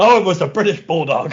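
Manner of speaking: high, loud, irritated snapping tone. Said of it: "And Vince snaps and goes".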